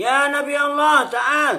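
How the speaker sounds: harsh, loud, high, rude snapping shout. Showing the impolite way to address the Prophet: snapping, shouting. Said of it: "itu namanya bentak itu. Gak sopan tuh".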